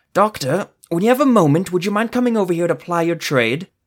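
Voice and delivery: voice held under strain. An injured sorcerer calls the doctor over, in a strained voice. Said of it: "in a strained voice".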